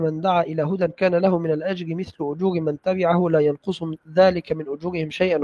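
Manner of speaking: normal talking voice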